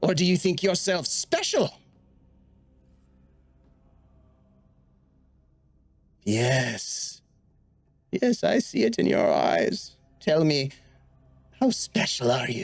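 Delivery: lilting, swooping, animated sing-song creature voice. Voicing a creature questioning a charmed player character: voicing a creature. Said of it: "this creature on the far end of the hall, Alrin's friend, says".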